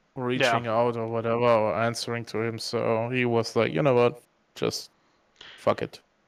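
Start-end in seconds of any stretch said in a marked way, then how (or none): none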